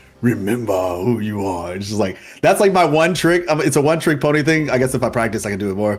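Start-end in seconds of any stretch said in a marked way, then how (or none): 0.2-1.8 deep, slow, low voice, every word weighed. Speaker showing off a favorite impression trick, doing a Mufasa impression. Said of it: "Like Mufasa is like".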